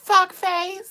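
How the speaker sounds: loud, shrill, very high-pitched little squeak. Retelling shouting back at a guy who swore and drove off, loud high-pitched voice. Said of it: "I said it really loud with a little high pitched voice".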